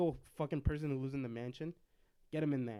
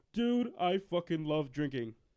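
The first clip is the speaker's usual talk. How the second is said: deliberate, slow, each word drawn out, celebrity-style put-on voice; 3 semitones higher, 4 dB louder than usual. Joking about a Bert Kreischer Ghostbusters role, doing a Bert Kreischer impression.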